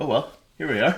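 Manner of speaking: deflated, let-down, disappointed tone. Quoting the usual intro line of the podcast, imitating a disappointed tone. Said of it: "You sound disappointed".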